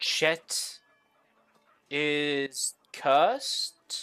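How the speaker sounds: broken pidgin, drawn-out "is". Voicing a bartender trying to make sense of the words: broken pidgin Common. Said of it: "He asks in very broken, pigeony common".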